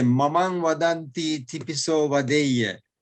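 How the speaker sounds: ordinary delivery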